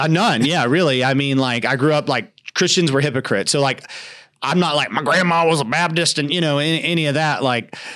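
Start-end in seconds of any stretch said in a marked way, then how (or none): 4.9-6.2 furious-sounding voice. Mocking how some people talk about their church background: imitating an angry baptist. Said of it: "That's the angry Baptist voice".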